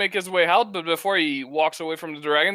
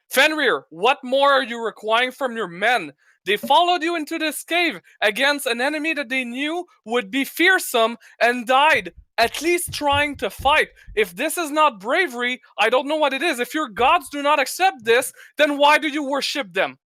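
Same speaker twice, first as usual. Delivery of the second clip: heated, angry outburst, voice raised and pitched up; 8 semitones higher than usual. Voicing a character who angrily confronts a leader: angry raised voice. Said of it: "gets kind of angry at that and raises his voice".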